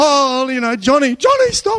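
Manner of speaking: very lively, animated, loud, rising exclaiming. Retelling how Seth came up and told Johnny to stop: animated imitation of Seth. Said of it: "she's very animated".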